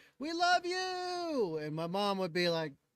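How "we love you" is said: very high squealing scream, "you" drawn out. Retelling girls at a bus window calling out: imitating girls screaming. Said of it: "So they'd all be screaming".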